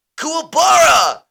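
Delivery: very high, very loud, rough yell. Doing a Yusuke Urameshi voice after being asked. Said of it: "do the Yusuke".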